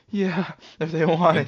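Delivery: put-on keen, thrilled tone. Mocking the other speaker's answer: imitating an excited reply. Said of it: "Why do you sound like you got excited?".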